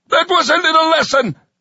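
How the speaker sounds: very high, screeching sergeant voice. Narrating the sergeant addressing the others after striking the victim; screeching. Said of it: "the sergeant screeched".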